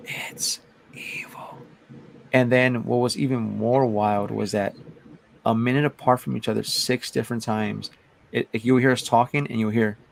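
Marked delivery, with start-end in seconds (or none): 0.1-1.5 creepy, eerie, very quiet whisper. Retelling what a male voice answered to their question, creepy whisper. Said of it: "like in this creepy whisper".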